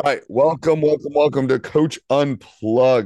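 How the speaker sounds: hoarse, worn-out voice, very high and loud. Welcoming listeners to the podcast at mid-season: voice shot. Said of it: "My voice is shot".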